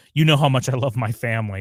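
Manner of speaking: put-on sarcastic tone. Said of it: "He's like".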